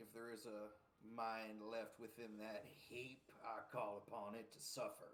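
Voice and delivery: soft half-whisper under the breath. Casting a spell on a creature, half-whispering to it in character: half-whispering in character. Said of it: "I'm gonna whisper to it".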